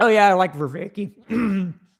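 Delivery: high voice cracking mid-line. Moving on from a rant to someone they like, voice crack. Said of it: "that was an epic voice crack right there".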